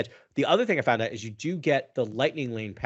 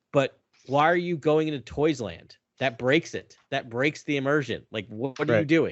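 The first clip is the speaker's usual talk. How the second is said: half-yelled, mildly raised voice; 3 semitones higher than usual. Retelling what was yelled at an iPad while watching: imitating own yelling. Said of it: "I was yelling at my iPad".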